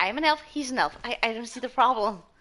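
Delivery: plain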